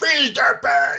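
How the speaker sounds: put-on angry snap. Describing a small quiet woman who gets provoked, imitating her angry outburst. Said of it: "talks like this until you piss her off. Then she's like".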